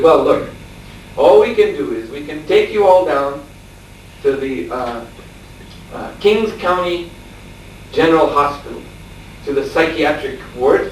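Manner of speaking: usual speaking voice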